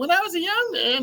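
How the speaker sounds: put-on very high, squeaky young boy's voice. Retelling preaching at age twelve: imitating own squeaky child voice. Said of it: "my little squeaky voice".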